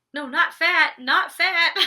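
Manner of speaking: very loud, very slow, drawn-out high yell. Recapping a reunion fight, imitating Tanisha yelling. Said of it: "Tanisha is yelling, like".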